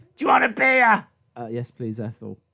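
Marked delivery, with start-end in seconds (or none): 0.2-1.1 put-on shouting waitress voice, higher and louder. Acting out a Hooters waitress taking an order: Ethel the waitress shouting. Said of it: "Can you stop shouting at me".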